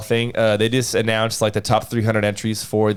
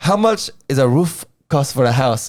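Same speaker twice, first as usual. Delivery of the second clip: imitated heavy Mexican accent; 4 semitones higher, 3 dB louder than usual. Retelling a customer's joke, imitating thick Mexican accent. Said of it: "he has a really thick accent".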